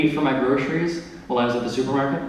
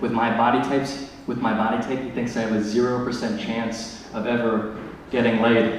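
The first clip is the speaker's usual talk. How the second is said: ordinary talk, nothing marked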